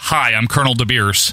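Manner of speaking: put-on plain American accent. Mocking a gimmick meant to be South African: Colonel DeBeers in plain American accent. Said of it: "In a regular American accent".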